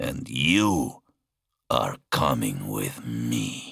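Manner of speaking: deep, very low growl from the very bottom. Narrator reads the giant demigod speaking as she loses consciousness, Talos growl. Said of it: "he growled".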